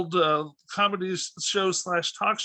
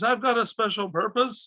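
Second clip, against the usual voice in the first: higher-pitched scream; 4 semitones higher than usual. Recounting a favorite movie scene to a host, retelling Steve's scream. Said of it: "when he screams".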